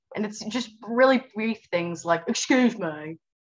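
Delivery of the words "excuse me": lower, put-on British man's accent. Showing the British accent always done for British men. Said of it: "British men".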